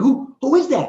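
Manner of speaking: very high, loud stammer, stumbling on repeated "who". Acting out a startled woman seeing a figure: imitating someone stammering.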